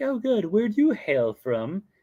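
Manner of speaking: put-on terrible princess accent, pitched way up. Speaker retelling a park character chatting with the custodians, bad Aurora accent. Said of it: "my accents are going to be terrible".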